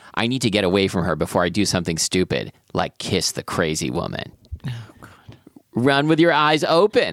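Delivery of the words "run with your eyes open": high, taunting, mocking copycat tone. A woman behind the narrator repeats his words back at him, mocking voice. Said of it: "I hear in a mocking voice behind me".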